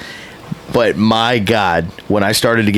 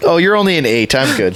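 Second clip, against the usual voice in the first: ordinary talk, nothing marked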